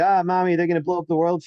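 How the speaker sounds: put-on scared, freaked-out, panicky little kid voice. Retelling a story about a scared little kid talking to his mommy, imitating a freaked-out kid. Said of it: "he's all freaked out".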